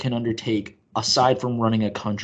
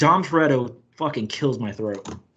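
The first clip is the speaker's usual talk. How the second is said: ordinary talk, nothing marked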